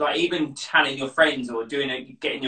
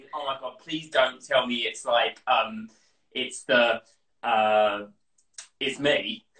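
usual speaking voice

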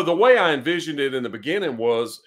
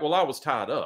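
mock nonchalant, offhand tone; 4 dB quieter than usual. Retelling a man's reply when asked why he hadn't called, imitating a nonchalant tone. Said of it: "he said it nonchalantly".

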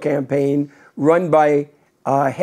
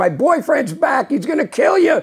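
mock girl screaming, higher pitch; 10 semitones higher than usual. Retelling a girl who burst into a candy store: imitating a girl screaming. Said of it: "started screaming".

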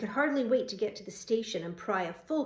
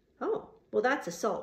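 plain

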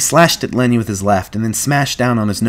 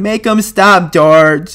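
very high, drawn-out bleat of terror; 9 semitones higher, 6 dB louder than usual. Lenny, attacked by Curly, cries out to George in terror. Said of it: "bleated with terror. He cried".

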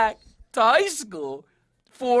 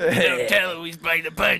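low, slow, scuttling troll voice. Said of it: "Alex, like, scuttling around".

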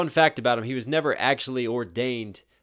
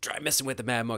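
raspy voice with a steady rhythm; 6 dB quieter than usual. Quoting a line after praising its cadence: raspy Rasputin voice. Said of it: "that raspiness to his voice".

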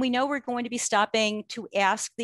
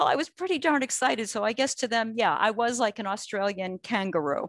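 normal talking voice

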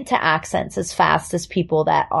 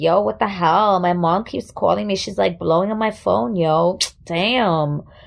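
put-on Puerto Rican accent. You act out how you German girls at the international school talked, in a put-on Puerto Rican accent. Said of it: "and we all talk like this".

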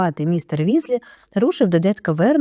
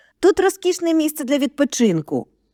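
tense, strained voice, pitched up; 9 semitones higher than usual. George adds to Fred's reply to Ron, in a strained voice. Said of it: "додав Джордж напруженим голосом".

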